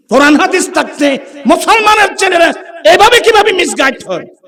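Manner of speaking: high, loud, outraged shout, belted out.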